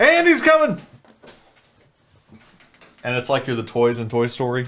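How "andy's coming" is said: mock shrill, very high shouted voice. Describing a TikTok trend where somebody calls out a warning: imitating a shout. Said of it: "where somebody shouts".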